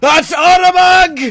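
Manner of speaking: very high, loud sailor-style shout. Voicing a sailor hanging from the ropes: sailor shouting.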